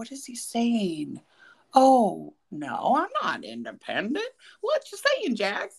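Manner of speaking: put-on high, swooping, sing-song Kentucky accent. Retelling Brittany's reaction to Jax, speaker imitates Brittany's Kentucky accent. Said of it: "In her adorable little Kentucky accent".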